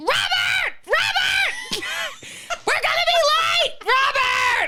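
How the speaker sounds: very high, very slow, loud, drawn-out hollering. Retelling a husband calling contest, imitating a woman screaming for her husband. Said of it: "just scream at their husbands".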